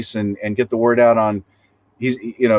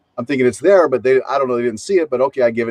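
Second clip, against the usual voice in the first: plain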